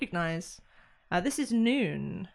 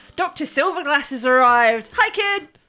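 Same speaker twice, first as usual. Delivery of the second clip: very loud, strange put-on voice, sudden and high; 5 semitones higher, 10 dB louder than usual. Someone lands on your back and announces an arrival in your ear, very loud, different voice. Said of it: "someone very loudly in your ear in a very different tone of voice just goes".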